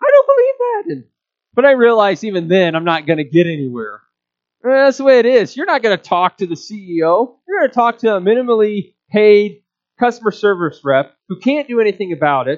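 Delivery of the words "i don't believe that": mock high-pitched kid voice, higher. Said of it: "my high-pitched voice".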